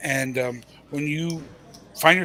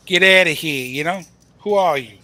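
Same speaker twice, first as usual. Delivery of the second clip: loud, put-on Italian accent, mobster voice; 8 dB louder than usual. Discussing a poker hand, in his best Italian voice. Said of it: "It's my best Italian voice".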